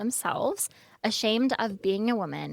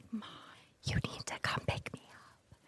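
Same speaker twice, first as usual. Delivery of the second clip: very quiet, hushed, secretive whisper; 11 dB quieter than usual. Retelling a school phone call to mom: imitating whispering on the phone. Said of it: "really quiet".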